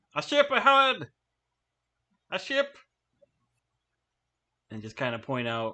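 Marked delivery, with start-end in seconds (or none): 0.1-2.7 very high-pitched, drawn-out yell. Voicing a character spotting a ship on their tail: in-character yell. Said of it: "I'm gonna yell out".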